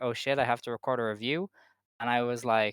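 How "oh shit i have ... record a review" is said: usual speaking voice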